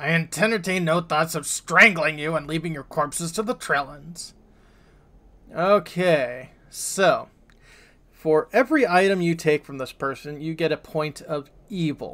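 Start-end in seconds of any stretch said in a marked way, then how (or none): 0.0-4.3 fast, snarled out, all bite. Game narrator voices a character answering the players, snarling. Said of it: "He snarls".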